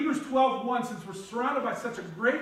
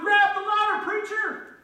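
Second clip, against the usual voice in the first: acted, high-pitched, loud yelling; 10 semitones higher, 5 dB louder than usual. Retelling a story, the helicopter crew calling to the preacher: imitating someone yelling. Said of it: "he yelled out to him".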